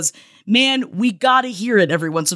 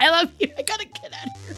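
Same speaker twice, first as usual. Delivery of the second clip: tearful, crying, breathy half-whisper; 9 semitones higher, 5 dB quieter than usual. Signing off after thanking listeners and shout-outs: crying while talking. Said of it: "now I'm crying".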